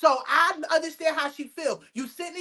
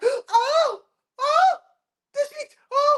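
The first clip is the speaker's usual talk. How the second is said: very high, loud, faked near-fainting panic; 11 semitones higher, 4 dB louder than usual. Describing people reacting when voices are raised, the speaker mimics them: mocking fake panic. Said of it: "They be about to pass out".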